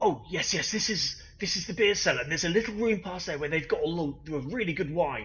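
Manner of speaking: loud stage whisper. Voicing a character looking into a beer cellar: loud whisper. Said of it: "he does a loud whisper".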